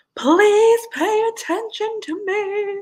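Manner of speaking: slow, drawn-out, yowling cat scream. Comparing how your two cats meow, imitating Dean screaming. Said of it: "Like he's like screaming".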